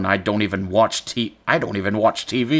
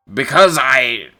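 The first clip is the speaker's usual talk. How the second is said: put-on elderly man voice, higher and louder; 4 semitones higher, 6 dB louder than usual. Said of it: "so I'll give him an old voice".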